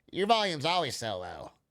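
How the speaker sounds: mocking, mimicking funny voice. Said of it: "doing the funny voice".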